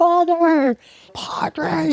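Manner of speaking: mock shrill, very high scream. Retelling calling out to a passing priest: retelling own scream. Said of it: "I scream at him".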